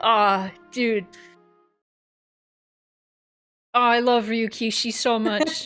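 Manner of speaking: teary, a little choked up, slow gushing. Reacting to a heartfelt message from a writer, tearing up a little. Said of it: "I'm actually tearing up a little bit".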